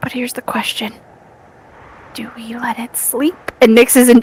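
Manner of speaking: speaking in a whisper. Speaking to the group while trying to keep quiet, whispering. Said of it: "I'm gonna stop whispering".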